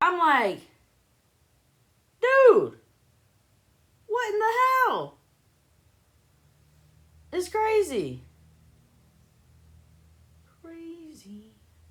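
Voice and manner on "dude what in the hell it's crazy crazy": screaming, higher and louder. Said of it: "What are you screaming about?".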